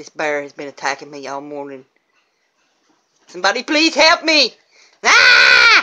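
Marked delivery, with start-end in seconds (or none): 0.0-4.5 low, scared voice rising in pitch, frightened and pleading. Speaking to y'all in a bit, sounding scared. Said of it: "I'm so scared".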